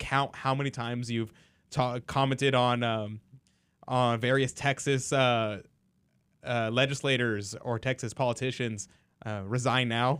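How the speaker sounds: ordinary talk, nothing marked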